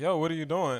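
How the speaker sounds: usual speaking voice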